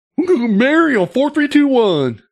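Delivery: mock idiot voice, dopey.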